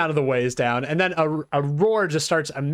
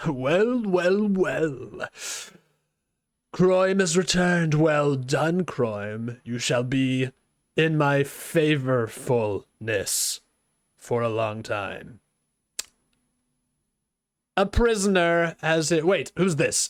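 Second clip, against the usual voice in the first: monster voice of a bugbear chief. Game master voicing a bugbear who turns to the group, in a bugbear character voice. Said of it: "he turns around sort of slowly and goes".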